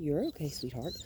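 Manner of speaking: gentle, soft-spoken, hushed murmur. Walking a dog on a leash, soothing it in a real soft tone. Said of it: "I'm just going to talk in a real soft tone".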